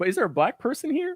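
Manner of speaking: very high comic voice, wide sing-song pitch.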